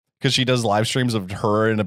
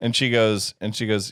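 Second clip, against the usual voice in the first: plain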